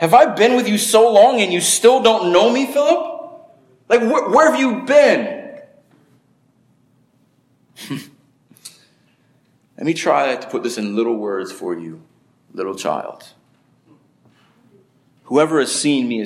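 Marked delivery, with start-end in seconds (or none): 0.0-13.3 high, swooping, condescending full-on sarcasm. Retelling a scripture reply, acting it out with full sarcasm. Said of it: "this is full sarcasm right here".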